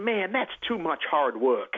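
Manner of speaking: put-on, borrowed American accent. Speaker quoting a man's reply in an american accent. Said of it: "pardon my American accent".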